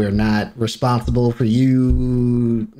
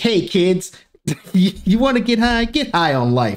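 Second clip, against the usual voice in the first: public service announcement presenter voice; 9 semitones higher than usual. Describing the PSA videos shown in class, imitating one of those PSA presenters. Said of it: "you sound like one of those people in the P S As".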